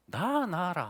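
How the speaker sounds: Busan-style Gyeongsang Korean dialect. Retelling what God's voice said to him, in Gyeongsang dialect. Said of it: "경상도 사투리로 들리더라고요".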